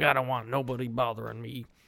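put-on sounding like a gruff old man. Retelling a movie scene where Noah confronts visitors: gruff Noah impression. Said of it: "he's a gruff old man. He's like".

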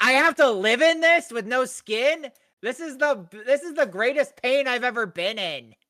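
loud, high, put-on angry creature voice. Voicing a skinless creature complaining about its pain: put-on angry creature voice. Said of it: "that's why he's so angry all the time".

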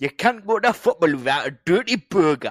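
very loud, high Geordie accent. Talking about dirty burgers at football, in a geordie accent. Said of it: "my Geordie accent".

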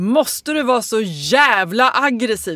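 slow, very loud, dragged-out scream at full blast. Speaker retells snapping back at a man screaming at them, retelling own very loud yell. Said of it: "skriker jag då jättehögt".

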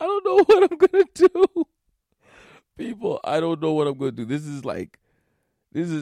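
speaking through laughter. Up at 5 a.m. before a deadline, unable to learn an app, laughing while talking. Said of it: "I'm laughing".

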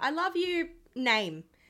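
loud, high, drawn-out yell. Retelling shouting into a concert microphone to a friend: imitating own yell. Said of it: "literally yelled into the microphone".

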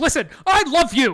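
shrill, very loud, high-pitched all-out yell. Recounting a funny scene, retelling a man yelling at her. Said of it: "he's like yelling at her".

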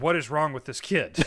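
ordinary delivery

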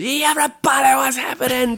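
very high, pumped-up, hyped showman stage voice. Contrasting how one talks on stage: imitating own onstage voice. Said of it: "when I'm on stage".

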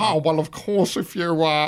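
stock 80s comedy nerd voice. On a podcast, the speaker slips into a voice they keep doing: 80s comedy nerd voice. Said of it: "I keep going".

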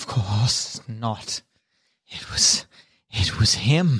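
speaking through chattering teeth. Asked whether he made the statuettes, a character denies it, teeth chattering. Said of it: "with his teeth chattering".

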